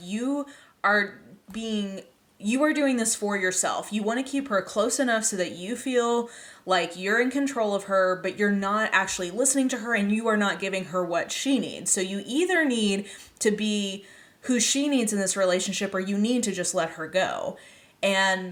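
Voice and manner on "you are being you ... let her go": ordinary talk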